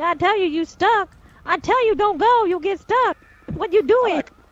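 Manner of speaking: loud shouting, yelling. A character in a scene yells at the others, shouting. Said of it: "Stop shouting at us".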